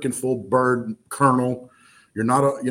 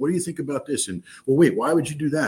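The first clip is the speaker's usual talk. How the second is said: mock curious five-year-old voice, higher pitch; 3 semitones higher than usual. Retelling how he questioned a colonel, acting like a curious five-year-old. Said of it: "like I'm a 5-year-old".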